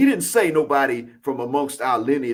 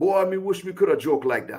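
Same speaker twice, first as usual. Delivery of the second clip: put-on Jamaican Patois accent; 5 semitones higher than usual. Speaker quotes a man who switched to Patois while talking with them, in Patois. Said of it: "he switched to Patois and he said".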